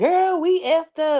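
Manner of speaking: put-on drunk voice, high, slow and loud wailing.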